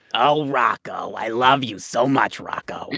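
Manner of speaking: very low, slow, drawn-out cartoon voice. During a chat about candy, saying a line: Bev Big Head voice. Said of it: "it's like the Bev Big Head voice".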